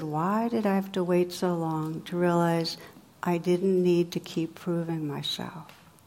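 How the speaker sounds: put-on sad tone. Speaker quotes what a man said to them, retelling his sad words.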